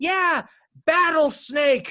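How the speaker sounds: put-on shrill, eager, very high-pitched excited shout. Retelling how a girl behind you suddenly started yelling. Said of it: "some girl behind me just starts just yelling".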